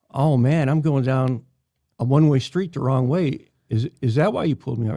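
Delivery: ordinary delivery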